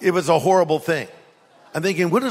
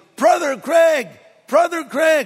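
mock, very high, loud calling-out voice; 10 semitones higher than usual. Retelling how a guy called out across a high school campus: imitating someone yelling loudly. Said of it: "some guy yells out very loudly".

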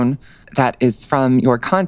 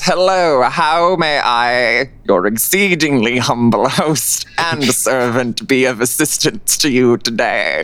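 unhurried, deliberate, slow, drawn-out stately host voice. Voicing Archibald as a player walks up to the desk: Archibald voice. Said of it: "and Archibald goes".

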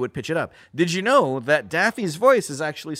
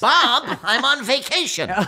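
very high, slow, drawn-out lisping voice; 9 semitones higher than usual. Showing a personal version of the Daffy voice: lisping Daffy voice. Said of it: "My version of Daffy is Richard Dreyfuss with a lisp".

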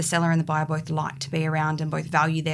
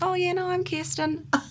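put-on New Zealand accent, pitched very high. Describing mimicking clients, the speaker slips into a put-on Kiwi accent. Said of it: "with a Kiwi accent because I'm copying the client".

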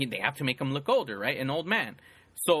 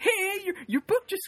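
put-on happy voice, higher. Retelling Biff walking in with the box: imitating a happy Biff. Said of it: "all happy".

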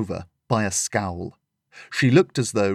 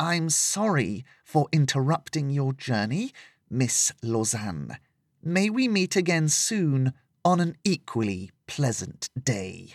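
quiet, soft, spiteful, only just held in check; 3 semitones higher, 5 dB quieter than usual. A woman addresses the girl she glares at, soft, barely containing spite. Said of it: "She spoke softly, barely able to contain her spite".

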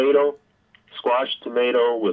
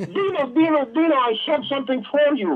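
eager, excited, very high-pitched put-on voice. Doing the requested impersonation of an always excited friend: Alex Florov impression. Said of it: "your Alex Florov impersonation".

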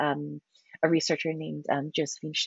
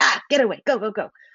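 loud, hostile, aggressive shouting, pitched up; 5 semitones higher, 5 dB louder than usual. Showing how an aggressive person sounds: demonstrating aggressive shouting. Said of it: "my voice gets low and, um, louder".

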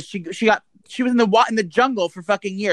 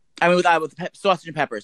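ordinary talk

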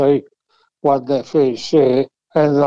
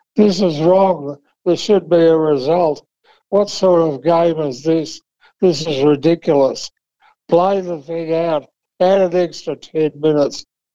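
mock complaining rant, screamed; 3 semitones higher than usual. Retelling a drawn grand final from the stands, imitating Brock screaming. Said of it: "screaming at the top of his voice".

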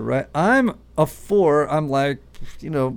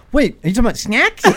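put-on little cartoon child voice, whole pitch shifted; 8 semitones higher, 5 dB louder than usual. Pointing out to the others how she just said it, go into imitating her changed-pitch cartoon child voice. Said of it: "the whole pitch of the voice goes".

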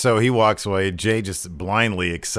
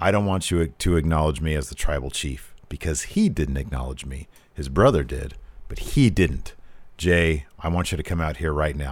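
low, quiet, barely audible talking voice; 5 semitones lower than usual. Retelling a wrestling promo, imitating Roman Reigns talking low. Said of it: "I'm trying to talk as low as I can".

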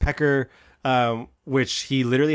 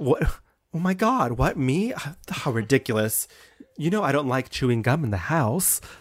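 mock hoity-toity posh society lady voice. Acting out a rich woman who gets away with murder: imitating a hoity-toity rich woman. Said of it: "kind of hoity-toity society".

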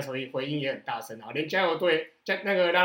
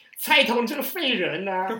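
mimicked jeering voice, much higher; 7 semitones higher, 4 dB louder than usual. Recalling a baseball game, the speaker mimics an uncle jeering at a batter: imitating a heckling uncle. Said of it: "那个大叔也在那边讲".

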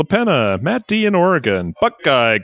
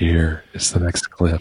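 hushed, whispery voice; 7 semitones lower than usual. Introducing the next clip of a listener quiz, in a whispery voice. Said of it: "In a whispery voice, I beg of you".

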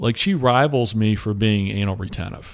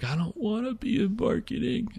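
very high voice, sobbing through tears; 13 semitones higher, 8 dB quieter than usual. Retelling what she said when she came back crying: imitating someone crying. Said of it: "she comes back and she's crying".

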